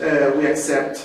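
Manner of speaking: ordinary talk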